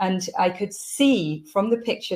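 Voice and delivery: ordinary talk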